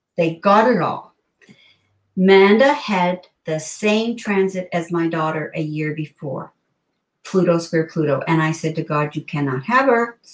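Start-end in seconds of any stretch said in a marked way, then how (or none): none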